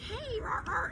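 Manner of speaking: high, chirping parrot-like voice.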